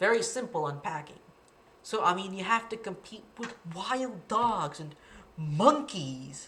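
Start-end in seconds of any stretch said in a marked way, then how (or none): 2.3-6.5 mildly fed-up, a little exasperated. Demonstrating how an unpacked sentence is delivered: a little exasperated. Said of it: "a little exasperated and a little pause here".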